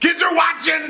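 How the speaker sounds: overdone put-on shouting.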